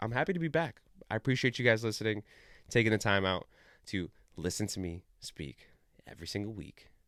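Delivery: alluring, come-hither, seductive voice. Closing the show, the host thanks listeners, seductive voice. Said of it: "I just started using my seductive voice".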